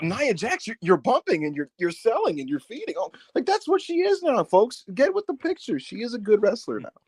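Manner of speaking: condescending, patronizing, sing-song delivery. Imitating how the timeline praises nia jax: mock condescending tone.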